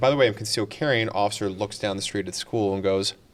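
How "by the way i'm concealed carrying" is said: ordinary talk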